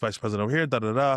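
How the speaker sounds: ordinary talk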